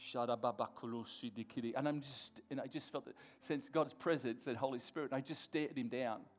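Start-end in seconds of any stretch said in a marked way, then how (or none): 0.1-1.7 lower-pitched, prayer-like muttering under breath. Retelling praying in tongues while facing a drunk man: imitating muttering under breath. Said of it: "And under my breath".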